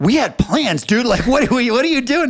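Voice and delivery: very high, swooping, furious yelled outburst. Retelling driving back after losing a job, retelling own yelling at god. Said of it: "And I'm yelling at God".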